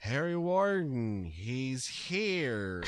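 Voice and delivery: mock very slow, limp delivery with no oomph. Retelling how a character says a line in the movie: flat Axel impression, no oomph. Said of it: "there's no oomph behind it".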